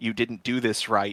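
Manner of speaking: ordinary delivery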